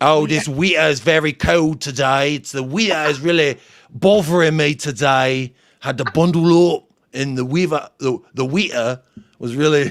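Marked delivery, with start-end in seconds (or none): 0.3-5.5 broad common regional English accent. Speaker demonstrating how they themselves pronounce words, in a common english accent. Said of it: "it's all part of your accent".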